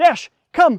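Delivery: bursting with energy, excited, very high and loud. Teaching dog owners how to call the dog: excited, energetic. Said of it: "it's always going to sound like this".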